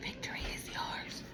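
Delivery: very soft whisper, close to the ear. Retelling words once heard whispered in the ear, soft whisper. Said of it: "it's like me whispering it into your ear".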